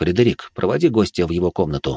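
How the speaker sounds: ordinary delivery, nothing marked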